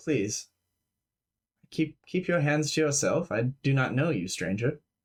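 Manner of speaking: courteous, composed, calm gentleman's voice. Voicing a creature speaking from inches away in the dark: calm gentleman's voice. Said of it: "the voice will say again".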